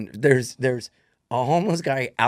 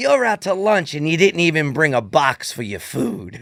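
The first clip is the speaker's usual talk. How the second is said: put-on yelling voice, louder; 3 semitones higher, 4 dB louder than usual. Retelling what a woman said to them, imitating a yelling old New Yorker. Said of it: "this woman's yelling and she's just like a crazy old New Yorker".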